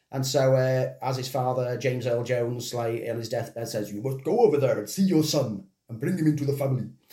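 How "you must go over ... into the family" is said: put-on shaky voice slipping into a Welsh accent. Retelling a film scene where the father speaks on his deathbed: poor James Earl Jones impression. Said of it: "That was a poor impression".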